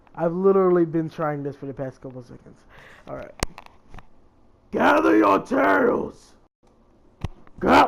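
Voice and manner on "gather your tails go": very slow, gritty, rough, drawn-out, pitched-up voice. Attempting an impression after mentioning Naruto gameplay: Kurama voice. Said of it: "I can do Kuroma's voice".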